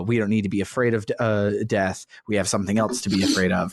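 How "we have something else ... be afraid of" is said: ordinary talk, nothing marked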